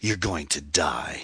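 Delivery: sibilant, slow, drawn-out hiss. A man entering the loft springs toward a woman: hissed. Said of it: "he hissed".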